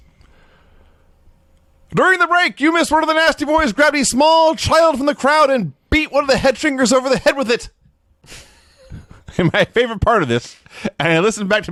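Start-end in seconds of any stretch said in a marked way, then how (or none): 1.9-7.7 frenzied announcer-style shout. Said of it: "Rob Bartlett as Vince".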